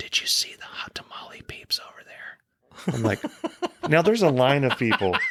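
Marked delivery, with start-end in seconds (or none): 0.0-2.9 hushed, secretive, leaning-in whisper. Telling a story about a lady at Walgreens, repeating what she whispered to the speaker. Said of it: "And she whispers".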